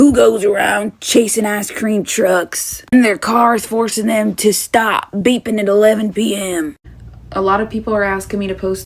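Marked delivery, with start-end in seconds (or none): 0.0-6.8 put-on very old, elderly-sounding voice, slower. Retelling what a man who came up to him said: very old voice. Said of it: "he literally said in a very old voice".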